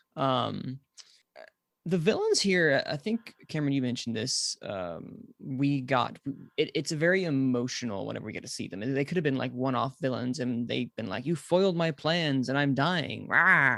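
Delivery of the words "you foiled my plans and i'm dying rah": put-on slow, old-timey nineteen-twenties villain voice. Mocking how one-off villains would sound when defeated: one-off villain voice. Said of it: "that's how they would sound".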